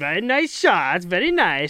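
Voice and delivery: high, swooping comic voice. A goalie showing what he says to other goalies mid-game, in Borat voice. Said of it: "Like I probably be just like Borat voice".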